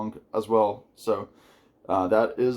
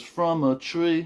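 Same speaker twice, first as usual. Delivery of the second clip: put-on Liverpudlian accent, pitched up; 6 semitones higher than usual. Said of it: "me trying to do a Liverpudlian accent".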